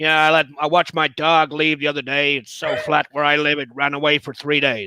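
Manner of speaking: put-on Midwestern accent. Asked by the other speaker to do one, telling a joke in a Midwestern accent. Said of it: "do like a Midwestern accent".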